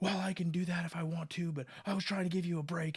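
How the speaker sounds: put-on annoyed, pissed-off, defensive irritated tone. Retelling how a man who was giving the speaker a break snapped back, retelling an irritated reply. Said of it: "he got pissed back and he was like".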